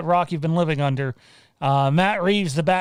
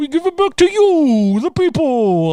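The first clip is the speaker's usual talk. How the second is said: terrible, badly done, very high, shrill, loud voice; 11 semitones higher, 7 dB louder than usual. Answering a viewer's comment by quoting a line: terrible Bane impression. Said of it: "that's a terrible impression".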